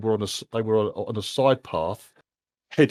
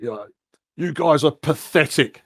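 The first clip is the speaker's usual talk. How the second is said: shouted, higher pitch and slower; 6 semitones higher, 5 dB louder than usual. A voice shouts out at people doing sword training, shouting. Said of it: "you can hear a voice shouts out like".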